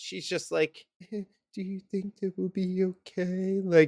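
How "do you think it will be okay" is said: very quiet, low-key, underplayed, unpanicked delivery. Mimicking a reaction the speaker hates, imitating a real quiet delivery. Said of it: "just like real quiet and like not panicky".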